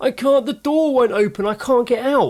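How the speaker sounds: mock, very high, frightened, pleading child voice. Retelling what a kid stuck behind a door said, imitating a scared kid. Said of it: "he was getting really scared".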